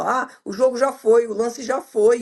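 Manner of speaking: usual speaking voice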